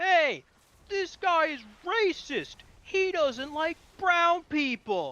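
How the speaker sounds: mock shrill, very high scream at top of lungs. Retelling what a man shouted at him, imitating screaming at the top of his lungs. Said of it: "he's just screaming at the top of his lungs".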